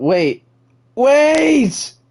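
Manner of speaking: shouting. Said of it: "I didn't mean to yell".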